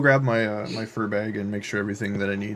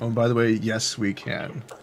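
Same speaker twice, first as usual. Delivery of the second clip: normal talking voice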